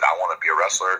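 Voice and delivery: ordinary talk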